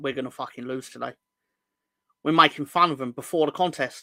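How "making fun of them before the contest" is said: normal talking voice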